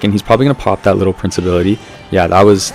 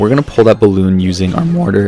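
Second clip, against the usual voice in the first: voice cracking. Explaining a mortar play, voice cracking. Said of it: "Voice crack".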